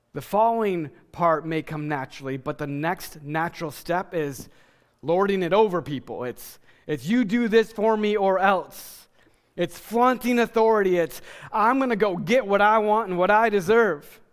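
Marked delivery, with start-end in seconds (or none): 11.6-14.1 put-on American Southern accent. Describing someone lording it over people, in a southern accent. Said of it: "I have a southern accent when I say that".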